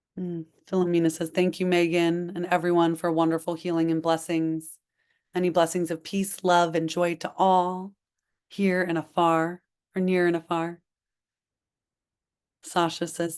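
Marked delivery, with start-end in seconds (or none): none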